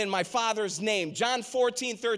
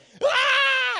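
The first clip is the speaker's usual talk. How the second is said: put-on very high, long, drawn-out kid's scream; 7 dB louder than usual. Retelling how a kid in the water kept screaming: imitating a kid screaming. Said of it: "He's just screaming".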